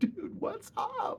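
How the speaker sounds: very high, slow, stunned and amused disbelief.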